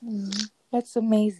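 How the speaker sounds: sarcastic-sounding, seemingly unintended sarcasm. Responding to another speaker's story about comforting edits: sarcastic-sounding tone. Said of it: "That sounded so sarcastic".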